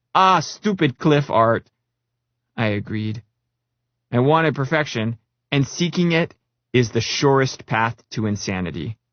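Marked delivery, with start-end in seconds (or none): 0.1-1.7 put-on heavy Norwegian accent while laughing. Retelling a coworker's laughing remark about the art: Pixel's thick Norwegian accent. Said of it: "laughingly said in his thick accent".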